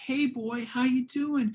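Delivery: very high, playful dog-talk voice. Showing how people talk when they talk to their dog: talking to a dog. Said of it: "listen to how people talk when they talk to their dog".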